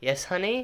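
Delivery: gentle, loving motherly tone. Retelling a scene where May answers Robin calling her mom: imitating May's softest motherly voice. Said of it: "she responds in the softest voice".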